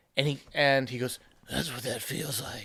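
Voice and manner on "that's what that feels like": very low, deep, hushed disguised voice. Speaker retelling a rooftop scene between two characters, doing Batman's disguised voice. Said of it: "Why are you disguising your voice?".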